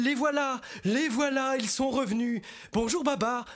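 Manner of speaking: very high, excited crying out, shouted. The elephants run toward babar arriving in his car; shouting. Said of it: "qui courent en criant".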